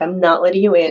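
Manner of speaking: ordinary talk, nothing marked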